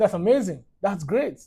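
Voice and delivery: ordinary talk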